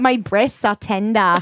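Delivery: attempted Australian accent, laid on thick. Trying out accents with a co-host, Australian accent. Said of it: "That was more Australian".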